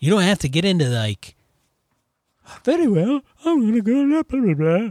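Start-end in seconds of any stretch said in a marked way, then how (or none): 2.6-4.9 very high, pitched-up voice. Giving an example of overly formal in-character table talk: Julia Child imitation. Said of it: "That was my Julia Childs imitation".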